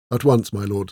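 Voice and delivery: ordinary talk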